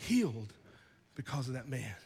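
low, hushed delivery.

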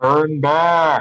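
loud, ominous voice. A voice from above calls down to the group approaching the house, ominous and loud. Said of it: "make my voice really ominous and loud".

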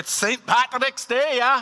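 put-on Scottish accent, pitched very high. Greeting the audience on St. Patrick's Day, in a Scottish accent. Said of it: "That's my Scottish accent".

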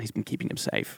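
emotional, soft, choked-up whisper.

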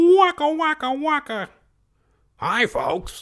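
pitch way up, loud. Describing a vintage TV Guide tin sign, the speaker does a Fozzie Bear impression. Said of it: "Or however the fuck he sounds".

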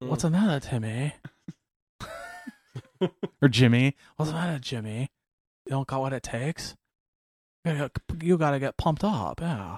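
put-on slight Japanese accent. Speaker doing a South Park-style character voice, slight Japanese accent creeping in. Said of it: "You're getting a little Japanese there".

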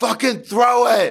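acted-out shrill, very high screaming yell. Retelling screaming at the TV in a bar: imitating his own screaming. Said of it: "screaming at the T V".

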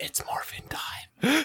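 breathy, close, barely voiced whisper. Retelling Rocky on a date, into the microphone: imitating Rocky whispering.

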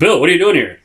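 put-on yell, high-pitched and urgent. Recounting finding someone in a projection booth, retelling yelling at him. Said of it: "legit yelling at him".

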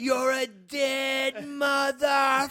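very loud, very high, shrill, stretched-out war cry. Retelling a fight, acting out a fighter's very drawn-out war cry. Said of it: "It's like the most drawn out".

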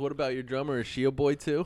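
normal talking voice

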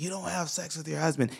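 acted-out yelling in broken English. Retelling how a man yelled at a woman: retelling yelling in bad english. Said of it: "the guy was yelling at her".

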